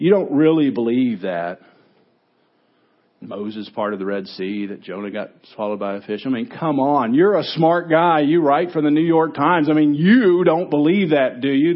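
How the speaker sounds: scornful, sneering, contemptuous mocking tone. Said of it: "he begins sort of in a mocking tone".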